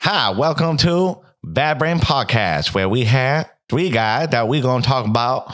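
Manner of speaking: put-on Chinese accent. Podcast host asked to do the show intro: mock Chinese accent. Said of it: "a Chinese accent".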